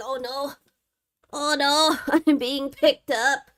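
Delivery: little, high, slow cat voice. Picking up a cat and voicing what she thinks: voicing the cat. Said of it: "She's like".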